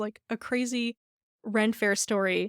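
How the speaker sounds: normal talking voice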